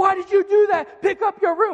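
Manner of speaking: shrill, full-volume, very loud angry yell. Showing how a parent yells at the kids before the phone rings: yelling. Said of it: "you're yelling".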